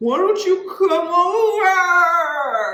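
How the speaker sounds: put-on very high, loud, sloppy, drunken slurring. Retelling a call with a woman, imitating her drunk voice. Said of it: "you sound really drunk right now".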